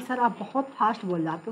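plain

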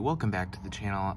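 plain

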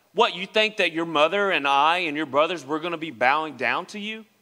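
ordinary talk, nothing marked

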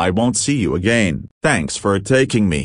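ordinary delivery

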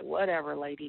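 ordinary talk

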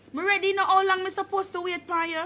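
high, impatient mom voice.

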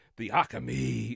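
imitated growl. Speaker recounting a growl a boy used to copy, imitating a growl. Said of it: "the growl".

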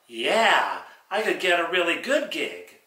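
smart-mouthed, wisecracking ventriloquist dummy voice. In a ventriloquist act, the dummy talks back to the ventriloquist in a dummy voice. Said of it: "More fun with my [name] dummy".

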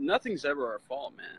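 said sarcastically. Talking to a listener, then owning up to the sarcasm; sarcastic. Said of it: "I'm being sarcastic".

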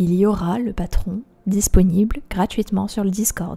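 mock radio presenter delivery. Repeating an announcement to listeners, in a radio announcer voice. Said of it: "je prends ma voix de radio".

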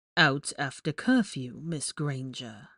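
low, drawn-out, disapproving drawl. Narrating Professor Snape catching Hermione out after curfew, a disapproving drawl. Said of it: "he drawled disapprovingly".

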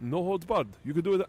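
horrible, badly done put-on Brazilian accent. Retelling what the man who started the UFC said about it: horrible Rorion Gracie accent. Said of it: "I'm doing a horrible accent of a Gracie right now".

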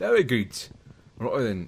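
put-on British accent. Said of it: "I speak British accents".

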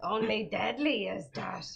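deep, thick Dublin accent. A viewer paid five dollars on the stream for this voice; do a Dublin Yoda accent. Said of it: "$5 for them both to do a Dublin Yoda accent".

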